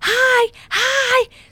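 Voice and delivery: play-acted, really loud, piercing very high-pitched yell. Recounting saying hi in front of her roommate, retelling a really loud hi. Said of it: "really loud".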